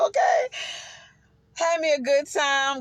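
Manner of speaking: out of breath. Talking to viewers after being out and hyped: out of breath. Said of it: "I'm all out of breath".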